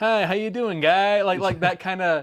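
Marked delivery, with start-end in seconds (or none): 0.0-1.2 put-upon friendly, guy-next-door neighborly voice. Explaining Phil's style while attempting Phil's put-upon voice. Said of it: "this put upon like".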